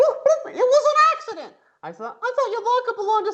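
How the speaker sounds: squeaky, very high, swooping cartoon puppet voice. Reading a story aloud, voicing Helga: Muppet-like voice. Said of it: "You sound like a Muppet".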